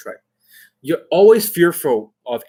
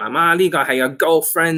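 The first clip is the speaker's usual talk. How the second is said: put-on Cantonese-accented English; 2 semitones higher than usual. Retelling how a cousin talked, imitating a Cantonese accent. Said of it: "He was speaking Cantonese".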